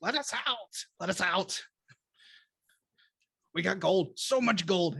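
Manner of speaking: frantic, overlapping, clamoring creature voices. A game master voices caged kobolds in Draconic, all talking over each other. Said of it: "all talking over each other like that".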